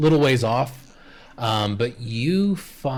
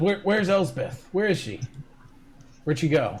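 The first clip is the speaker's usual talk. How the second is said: put-on dazed, sleepy young country boy voice; 3 semitones higher than usual. A cart-repair boy, just woken up, asks where Elsbeth went: cart-repair boy character. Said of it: "I'm in the business of repairing carts. / boy. / boy. / I don't know nothing about no yew branches, ... I ain't broke no carts".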